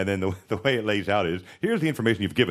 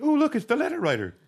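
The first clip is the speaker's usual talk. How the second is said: play-acted very high, bright, happy, cheery tone. Asking how others greeted the letter writer, imitating a happy tone. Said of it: "like, a happy tone in their voice".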